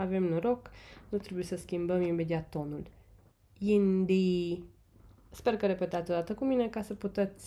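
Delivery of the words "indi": indi with both syllables even, on one level tone. Tone lesson, both syllables share one tone: same level tone on indi. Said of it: "ambele silabe au exact același ton".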